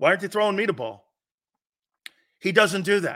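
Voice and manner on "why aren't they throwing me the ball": held-back, mild complaining yell. Acting out a receiver complaining beside the Rocky statue: imitating someone screaming.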